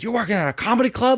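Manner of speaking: very high, furious, incredulous outburst. Retelling a father's reaction to working at a comedy club: imitating a furious dad. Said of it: "my dad was so furious".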